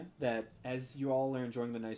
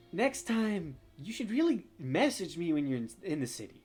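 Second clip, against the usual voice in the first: higher, more feminine put-on voice; 5 semitones higher, 4 dB louder than usual. Voicing a character who has tracked the listener down again, in a more feminine voice. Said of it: "in a more feminine voice than you would expect".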